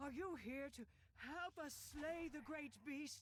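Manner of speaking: hearty, full voice. Greeting travelers who approach an encampment in a grove: hearty voice. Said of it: "A hearty voice calls".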